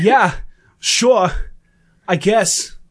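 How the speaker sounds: halting put-on celebrity drawl. Rereading a listener's reply as if Christopher Walken said it. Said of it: "sounds like, uh, like, fucking Ch-, Chris Walken said it".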